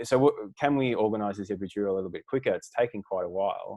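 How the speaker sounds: usual speaking voice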